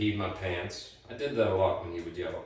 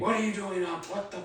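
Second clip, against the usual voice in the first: very high, shrill screaming outburst; 13 semitones higher than usual. Retelling a father catching a child awake: imitating a father screaming. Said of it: "my dad starts screaming".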